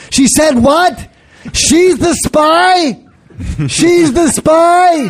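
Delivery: put-on very high, slow, drawn-out yelling. Voicing the invented listener yelling at the end of a movie: put-on yelling guy voice. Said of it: "He yells at the".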